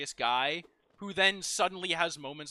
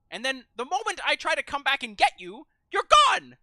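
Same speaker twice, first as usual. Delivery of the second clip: skeleton character voice, very high and loud; 9 semitones higher, 7 dB louder than usual. Showing the Papyrus voice, scolding Sans about his room: Papyrus voice. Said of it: "it's just the Skeletor voice".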